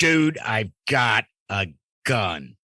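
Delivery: mock stern, firm, authoritative command voice. Recounting yelling at a man in his best command voice. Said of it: "I yelled at the dude at my best command voice".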